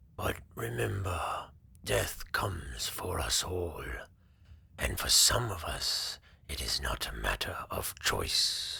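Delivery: soft-spoken, gentle, quiet dragon voice. Reading a story, as the dragon Tharagon answering the knight, speaking softly. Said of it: "I am the last of my kind, / The dragon was enormous, easily twice the size of any creature Cedric had faced in his long career. His wings, once vast and powerful, were now folded tightly against his b".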